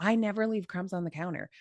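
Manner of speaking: mock-deadpan, flat delivery. A wife acts out her husband's reply to her complaint, retelling a deadpan denial. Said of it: "But he'll do it deadpan".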